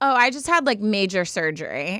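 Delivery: ordinary delivery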